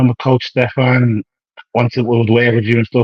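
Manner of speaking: ordinary talk, nothing marked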